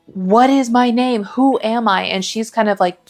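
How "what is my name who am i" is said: half-shouted, slow, stretched-out mild yell. Retelling a story where a character screams his own question: imitating a character shouting. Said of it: "screaming, like, shouting".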